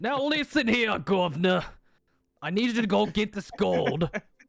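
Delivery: put-on failed Australian accent, pitched very high. A player insists his character must use an Australian accent: bad Australian accent. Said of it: "that was yeah. not Australian".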